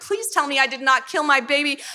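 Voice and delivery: mock frantic pleading, panicked, tearful crying. Retelling her own panic while pregnant, retelling a panicked cry. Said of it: "I start crying and like freaking out".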